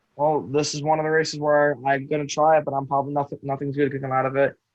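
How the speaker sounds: ordinary talk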